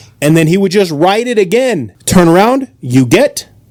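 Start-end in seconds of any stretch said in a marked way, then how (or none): 2.8-3.4 imitated thick Russian accent. Retelling what the russian statistics teacher asked: imitating a thick russian accent. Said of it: "he would explain in a thick accent".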